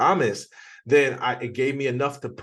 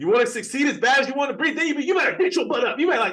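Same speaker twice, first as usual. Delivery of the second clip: mock, very high-pitched, fired-up, energetic yelling; 14 semitones higher, 3 dB louder than usual. Telling how you got permission to be more expressive, do your yelling Eric Thomas impression. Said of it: "now I'm yelling".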